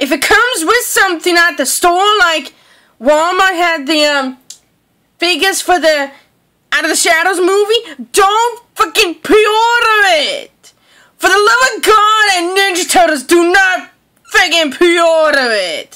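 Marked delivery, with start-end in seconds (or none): 8.1-16.0 heated, forceful, emphatic, pleading rant. Addressing listeners who may be wearing headphones, shouting. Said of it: "I am sorry for the yelling".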